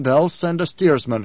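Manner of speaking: ordinary delivery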